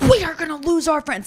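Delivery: high, loud, aggressive outburst.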